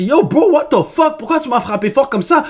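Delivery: irritated riled-up voice. Speaker acts out someone punched in the stomach while joking around: mock-angry, annoyed. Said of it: "tu commences à te fâcher".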